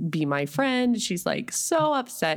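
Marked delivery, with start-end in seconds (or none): none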